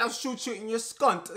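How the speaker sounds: put-on, fake tough-guy English gangster accent. Saying english accents can't sound serious, speaker imitates a threat: mock english gangster accent. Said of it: "I cannot take like an English accent seriously".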